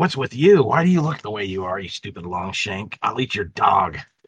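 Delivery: fantasy goblin creature character voice. Voicing a goblin who taunts a player before being thrown: goblin character voice. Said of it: "you pick up your goblin, and he's like".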